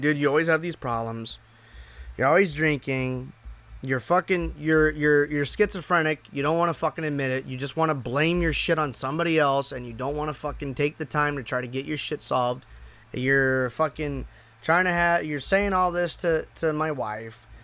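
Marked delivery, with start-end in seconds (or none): none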